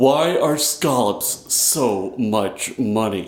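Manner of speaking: very slow put-on Philadelphia accent. Asking the prepared question aloud in a put-on philly accent. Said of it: "This is my best Philly accent".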